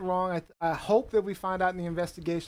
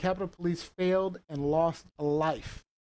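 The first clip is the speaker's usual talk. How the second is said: ordinary talk, nothing marked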